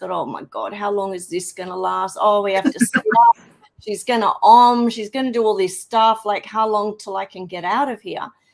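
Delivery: acted impatient complaining. Retelling own thoughts in an uncomfortable session: retelling own complaining. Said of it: "complaining in my head about how uncomfortable".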